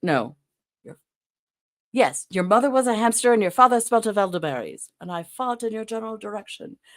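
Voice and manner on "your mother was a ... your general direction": bad put-on French accent, higher pitch. Quoting a Monty Python film line in a bad French accent. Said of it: "I can't do the accent right".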